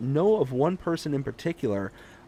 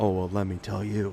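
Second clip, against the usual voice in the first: low, sultry put-on voice; 6 semitones lower, 3 dB quieter than usual. Showing off voices after an interviewer voice: sultry put-on voice. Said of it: "and then I can bust out my my sultry voice".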